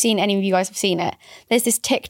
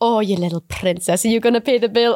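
put-on mock Italian waiter accent. Retelling a TikTok of a man pretending to be a waiter to a family: Italian waiter voice. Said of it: "pretending to be an Italian waiter".

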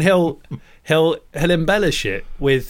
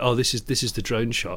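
imitated deadpan, lower, quieter, slower; 4 semitones lower, 5 dB quieter than usual. Retelling what a nine-year-old answered when asked about his music, imitating a deadpan reply. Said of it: "he just looked at me, deadpan".

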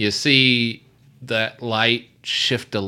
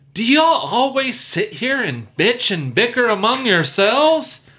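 very high, carrying shout; 12 semitones higher, 3 dB louder than usual. Voicing a woman in a cave who scolds the group: woman yelling from a cave. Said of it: "you hear this woman yell".

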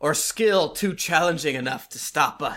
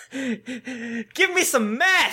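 put-on very slow, pitched-up, high girl voice; 8 semitones higher than usual. Joking with the table, imitating a sitcom daughter. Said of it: "an impression of the, the second oldest daughter".

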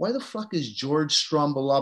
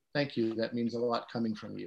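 mock deadpan, low, flat monotone; 4 semitones lower, 9 dB quieter than usual. Retelling someone's reply to a compliment: imitating a monotone thank-you. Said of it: "That's the most monotone".

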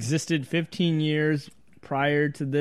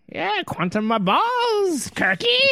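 put-on Irish accent, very high and swooping; 14 semitones higher than usual. Acting out a schoolyard rival answering back, stereotyped Irish accent. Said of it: "This Irish stereotype in the space school".

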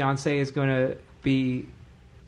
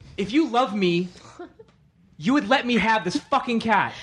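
blunt, angry, pitched-up voice; 8 semitones higher, 3 dB louder than usual. Taking a turn reading a scripted line, the actor delivers it angry. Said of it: "Oh, angry".

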